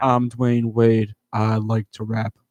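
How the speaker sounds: put-on flat monotone. Show the others how the opening verse sounded, with a very monotone Dwyane Wade impression. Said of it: "he was very monotone, like how I am talking right now".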